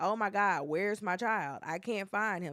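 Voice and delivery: ordinary talk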